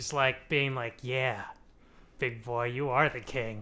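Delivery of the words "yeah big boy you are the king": mock seductive whisper, lower and quieter. Retelling a priestess whispering to a would-be king: imitating a seductive whisper. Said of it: "whispering in his ear".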